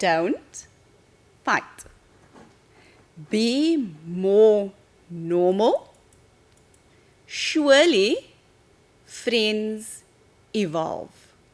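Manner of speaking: slow, deliberate delivery. Asked to repeat a sentence so the listener can write it down: saying it slowly. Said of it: "maybe you say it slowly".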